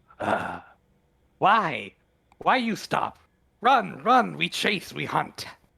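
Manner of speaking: piercing, high, shrill shrieking creature cry. Voicing a flying creature calling down to stopped prey: shrill shrieking voice. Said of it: "shrieks out in a shrill voice".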